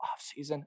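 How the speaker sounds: offseason breathed in a very soft whisper. Talking about college football, whispering the word 'offseason'. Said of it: "I whisper that term".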